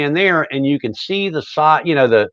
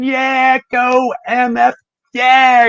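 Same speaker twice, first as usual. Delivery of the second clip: very high, very slow, drawn-out cheering scream; 10 semitones higher, 3 dB louder than usual. Retelling standing at the stage in front of the guitar player: imitating own past screaming. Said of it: "and I'm screaming".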